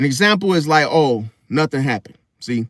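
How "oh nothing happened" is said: put-on emotionally flat voice, lower. Imitating a lying woman denying something: imitating an emotionally flat voice. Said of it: "she goes emotionally flat".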